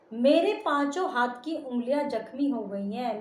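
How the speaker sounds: plain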